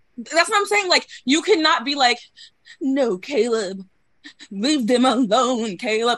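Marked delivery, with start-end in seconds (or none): 2.8-6.2 very slow, mocking, decrepit old-person voice. Making fun of someone among friends, in a mocking old-person voice. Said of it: "that's always the voice I go to".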